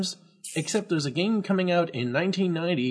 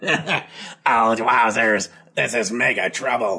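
put-on stuffy head cold voice, lower and louder; 6 semitones lower, 4 dB louder than usual. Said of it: "A head cold".

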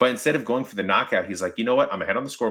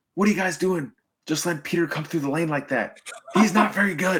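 high, hollering, yelling coach voice; 9 semitones higher than usual. Retelling how the coach stopped practice to scold the varsity: imitating coach yelling. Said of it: "started yelling at the varsity".

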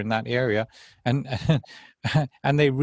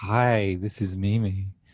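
put-on dulcet podcast-intro voice, pitched lower; 4 semitones lower than usual. Imitating the podcast host's opening line: imitating Mimi's dulcet intro voice. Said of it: "how do you do that really dulcet voice".

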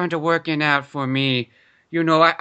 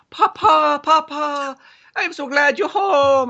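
put-on very high-pitched, very slow little-child voice; 10 semitones higher, 3 dB louder than usual. Picturing a man coming home to his poor family, imitating his child. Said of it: "It's like".

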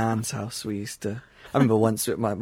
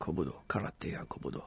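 soft put-on Japanese accent on every word; 6 semitones lower, 11 dB quieter than usual. Showing the other speaker how the word must be said, in a Japanese accent. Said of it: "You got to say it with a Japanese accent".

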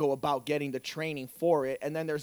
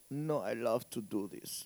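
put-on low, slow Eastern European accent; 4 semitones lower, 6 dB quieter than usual. Speaker acting out how a woman would answer his question, eastern european accent. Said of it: "That's my Eastern European voice".

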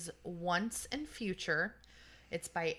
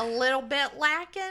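Southern drawl, higher and louder; 6 semitones higher, 10 dB louder than usual. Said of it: "That was a super Southern".

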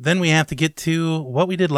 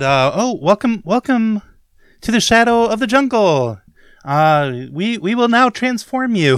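very friendly polite zombie voice, higher; 6 semitones higher, 4 dB louder than usual. Recapping last week's game, the zombies greet Brum: very friendly zombie voice. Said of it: "So we've got very friendly zombies. These are very friendly zombies. / and Brum politely confronts some shambling undead and finds them plagued with a foul fungus. / And they took swings at Brum".

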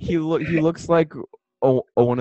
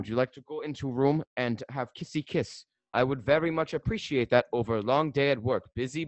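fake, put-on German accent, laid on thick; 9 dB quieter than usual. Speaker imitates how a man who came to america would talk, fake german accent. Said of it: "That's look like what he would sound".

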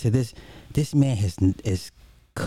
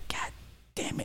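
soft, hushed, quiet whisper under the breath. Retelling how an angry father cursed: imitating a soft, quiet curse. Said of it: "really softly and quietly".

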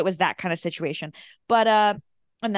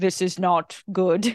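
slow, deliberate, machine-like cyborg voice. Picturing RoboCop walking in on a vampire scene: imitating RoboCop. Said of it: "RoboCop came in and was like".

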